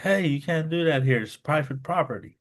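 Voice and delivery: play-acted high, loud yelling. Retelling being stopped from filming in a pawn shop: imitating someone screaming. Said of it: "And he starts screaming".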